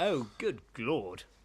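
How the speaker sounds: put-on snooty, posh upper-crust Southern English accent. Playing a Londoner who moved to the suburbs, in a posh, snobby Southern English accent. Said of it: "in a posh, snobby Southern English accent".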